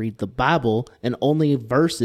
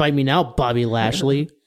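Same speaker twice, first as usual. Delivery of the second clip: normal talking voice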